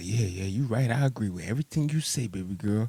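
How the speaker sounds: mock whispering voice. Speaker acts out being right behind her, agreeing with everything, imitating a whisper. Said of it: "right in the back of her whispering".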